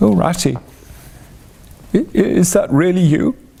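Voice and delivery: weak, faint, feeble, high little voice. Reading a story aloud, a voice in the hollow calls to Ratty in a feeble voice. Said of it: "came a feeble voice saying".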